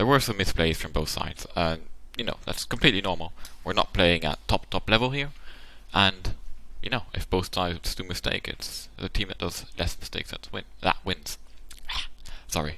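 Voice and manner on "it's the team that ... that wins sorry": soft, barely voiced, worn-out, giving-out voice. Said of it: "my voice is kind of dead right now".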